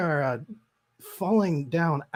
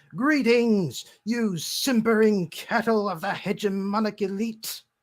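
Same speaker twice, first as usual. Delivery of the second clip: put-on character voice, pitched up high; 5 semitones higher than usual. Narrating to players as a newly arrived character speaks: booming Lucindus Crowell voice. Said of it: "you hear a booming voice".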